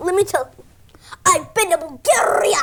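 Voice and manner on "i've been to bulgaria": put-on Scottish accent. Speaking as Max about geography: Max's Scottish accent. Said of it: "what would Max say about geography in his accent".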